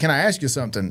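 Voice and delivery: normal talking voice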